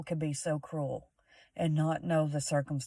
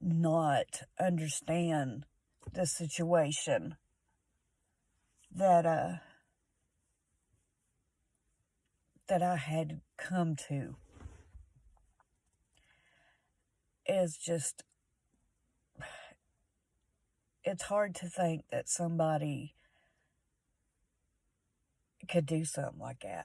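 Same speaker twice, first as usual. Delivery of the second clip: tearful crying, not drawn out. Speaker talking to her YouTube viewers about what someone did, crying. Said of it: "I'm sorry for crying".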